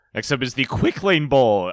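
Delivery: cracked voice, breaking mid-line. Introduce the next bowl game to your co-host, with your voice cracking. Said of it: "I don't know why my voice cracked there".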